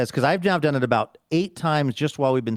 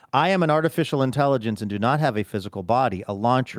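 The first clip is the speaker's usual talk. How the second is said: normal talking voice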